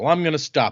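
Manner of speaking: normal talking voice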